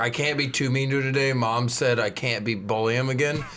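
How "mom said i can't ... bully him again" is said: normal talking voice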